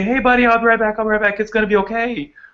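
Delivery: cheery jovial soothing tone. Explaining how dogs read owners, demonstrating the owner's tone: jovial, voice going up. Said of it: "whenever we're really jovial and our voices go up".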